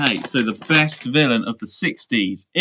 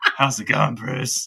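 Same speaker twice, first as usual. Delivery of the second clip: imitated villain voice. Recalling what the villain says, imitating Salamander. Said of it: "Mark's impression is".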